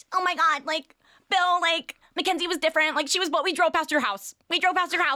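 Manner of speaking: very high-pitched, shrill, loud mom voice. Speaker retells their mom getting in a man's face; imitating mom's high-pitched voice. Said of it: "My mom has a very high-pitched voice".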